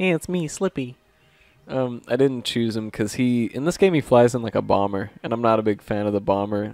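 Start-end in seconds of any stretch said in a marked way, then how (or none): 0.0-1.0 high, pitched-up cartoon character voice. Praising a game co-pilot's voice, quoting his voice line in a Slippy voice. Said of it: "Slippy's got a good voice".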